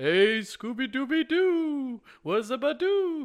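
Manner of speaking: very high, slow, silly cartoon character voice. Going real silly after serious talk, an impression: silly cartoon character voice. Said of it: "Here's an impression of a cartoon character".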